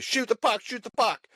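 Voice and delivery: shrill, very high, repeated hollering. Retelling his wife watching the hockey game, imitating her yelling. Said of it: "all she's yelling is".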